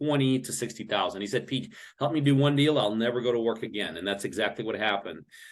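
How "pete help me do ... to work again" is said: usual speaking voice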